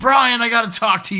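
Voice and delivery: very high-pitched, shrill shouting. Retelling how a man started yelling at the ground, acting out the yell. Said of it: "He starts yelling at the ground".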